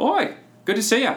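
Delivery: put-on cheery, high, swooping Cockney girl's voice.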